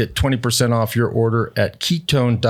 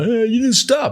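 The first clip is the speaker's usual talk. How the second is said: very high, grumpy, cranky scolding tone; 12 semitones higher than usual. Retelling what cranky drivers say about rolling a stop sign: imitating cranky people. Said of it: "All these cranky people".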